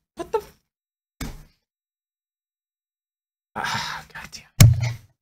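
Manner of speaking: half-whispered, breathy, emotional outburst. Ranting about taking guns from good people, the speaker breaks off: emotional outburst. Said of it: "I get emotional over that type of stuff".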